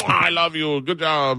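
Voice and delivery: put-on, high, excited, kissy, gushing voice. Retelling how an excited guy greeted someone: imitating an excited guy. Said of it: "he was excited".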